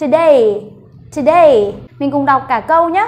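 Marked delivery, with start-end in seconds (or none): 0.0-1.7 today with loud stress on the second syllable DAY. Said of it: "Vậy mình sẽ đọc to âm thứ hai lên".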